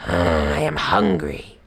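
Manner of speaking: deep, very low snarl. Narrator voicing the tiger just freed from the cage: snarling. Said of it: "he snarled".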